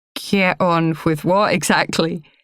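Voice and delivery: ordinary delivery, nothing marked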